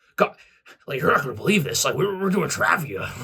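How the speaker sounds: blurted out loud, high and bad. Retelling what Jason said about the quiz: terrible Jason Kelce impression. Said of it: "It's a terrible Jason Kelce impression".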